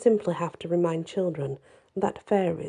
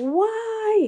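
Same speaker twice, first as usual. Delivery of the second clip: very high, shrill, drawn-out hysterical shriek; 5 dB louder than usual. Reading the blinded boy's cry to Diana, screamed hysterically. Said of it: "he screamed hysterically".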